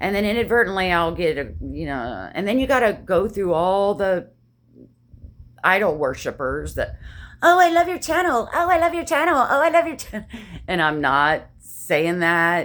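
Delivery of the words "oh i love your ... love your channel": very high, loud, mock gushing sarcastic voice. Retelling what commenters write, sarcastic imitation of commenters. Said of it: "I'm saying that out of sarcasm".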